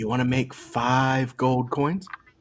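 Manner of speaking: whispering in a character voice. Whispering in character to Olivier during the game: whispering in character. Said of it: "He's gonna whisper".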